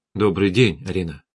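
ordinary delivery, nothing marked

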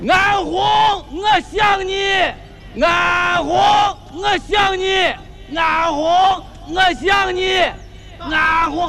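frantic shouting at the top of the lungs.

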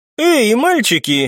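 taunting stretched-out words. The woman being discussed interrupts two arguing young men, mocking drawl. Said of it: "насмешливо протянула обсуждаемая красотка".

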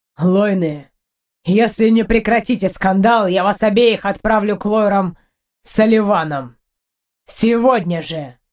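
stern, low, menacing tone. Einar warns his two quarreling wives, speaking menacingly. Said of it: "грозно произносит Эйнар".

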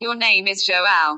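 genuine English accent. Answering a question about the user's name: true english accent. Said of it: "Spoke it with a true English accent".

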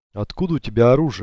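ordinary delivery, nothing marked

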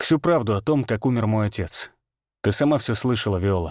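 ordinary delivery

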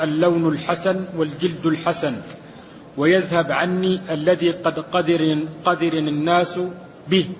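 plain

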